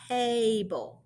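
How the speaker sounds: sounds stretched out very slowly. Teaching word sounds with Letterland characters, say the word with slow, stretched-out sounds. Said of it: "say the word really slowly and I'm going to stretch out the sounds".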